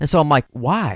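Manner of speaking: ordinary talk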